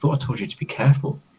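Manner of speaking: quiet whisper throughout. Playing a character speaking to an injured companion: whispered voice. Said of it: "in a whispered voice".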